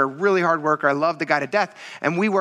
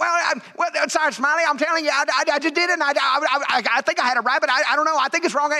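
mock-excited voice, much higher, slower; 10 semitones higher than usual. Retelling what a trainee said during a valve test, imitating an excited trainee. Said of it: "And he got like really excited".

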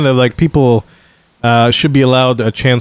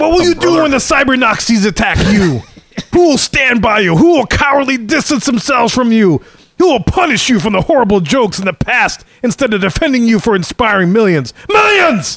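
very high, puffed-up put-on macho voice; 10 semitones higher than usual. Quoting what someone goes on to say, the speaker does a Macho Man impression. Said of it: "I have to go into some Macho Man here".

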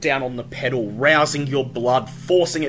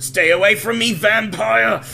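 groaning through gritted teeth, higher and louder; 8 semitones higher, 5 dB louder than usual. A badly wounded man warns off a vampire, groaning through gritted teeth. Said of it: "He groans through gritted teeth".

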